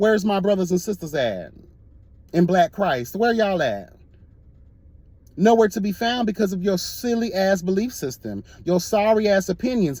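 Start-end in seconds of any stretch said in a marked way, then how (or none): none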